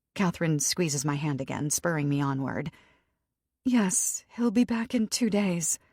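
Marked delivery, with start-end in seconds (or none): 3.6-5.7 tiny, small, barely-there voice. Answering a man's question as Catherine squeezes their hand, tiny voice. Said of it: "I manage in a tiny voice".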